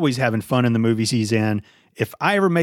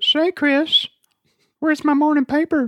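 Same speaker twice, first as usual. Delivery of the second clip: very high-pitched put-on voice; 14 semitones higher than usual. Someone asks who Herbert is; answer by calling to Chris in a Herbert the Pervert voice. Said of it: "Herbert the pervert".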